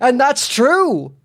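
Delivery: heavy put-on Brooklyn accent, very loud. Retelling how a guy always responds, in a thick Brooklyn accent. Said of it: "this guy with a thick Brooklyn accent responds with".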